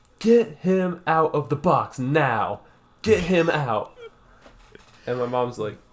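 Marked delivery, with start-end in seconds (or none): 0.2-4.0 loud, high, stretched-out, drawn-out yell. Retelling yelling at mom at a funeral: imitating own childhood yelling. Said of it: "I start yelling at her".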